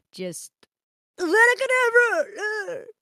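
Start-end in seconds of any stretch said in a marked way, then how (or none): 1.2-2.8 very high, sinister, menacing spell-casting voice. Talking about casting spells in Hogwarts Legacy, in a Voldemort voice. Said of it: "Voldemort voice".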